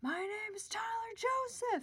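high, super-loud yelling. Retelling how a partner shouted out between songs at a concert: imitating someone yelling super loud. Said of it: "he just yells out, like, super loud".

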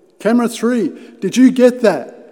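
high, loud, panic-stricken yell through a loudhailer. Retelling a man shouting through a loudhailer to someone atop a hill: retelling a panicked shout. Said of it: "panic-stricken, he grabs a loudhailer and shouts".

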